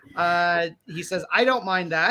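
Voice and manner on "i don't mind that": ordinary talk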